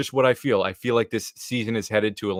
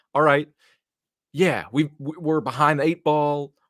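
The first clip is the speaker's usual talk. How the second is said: fake, twangy southern accent, pitched up; 6 semitones higher than usual. Mimicking what they're saying, with a southern twang. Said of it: "I don't know why I put a southern twang on that".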